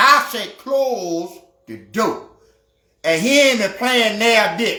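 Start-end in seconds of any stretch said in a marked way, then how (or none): 0.6-2.3 put-on grave, very serious, no-nonsense voice. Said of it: "he had a very serious tone on him".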